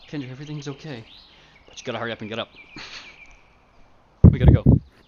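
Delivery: hushed, calm, soothing whisper up close. A character whispers in another character's ear to rouse her: calm whisper in her ear. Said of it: "Tazzle's gonna whisper in her ear".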